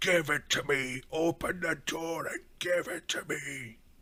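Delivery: put-on gruff voice, pitched high. Game master voicing a voice heard after a bestial roar, gruff voice. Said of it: "and then this gruff voice".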